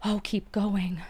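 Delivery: whispering, ghostly ghost voice. Narrator reading a story, a ghost voice in the girl's ear, ghostly whisper. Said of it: "whispered a ghost voice in her ear".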